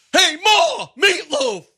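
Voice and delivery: very high-pitched, loud screaming yell. Imitating an actor's screaming movie lines: imitating Will Ferrell screaming.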